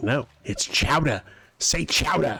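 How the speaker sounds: put-on strong Jersey accent. Retelling a Simpsons scene, the speaker voices Mayor Quimby's nephew in a Jersey accent. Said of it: "has that very kind of Jersey accent, and he's like".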